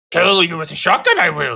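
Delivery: very loud, high, booming, swooping angry rant. Retelling getting stuck on a game boss and ranting at it: ranting in a Yoda voice. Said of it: "started ranting in a Yoda voice".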